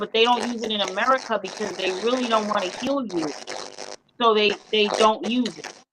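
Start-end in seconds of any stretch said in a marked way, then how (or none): none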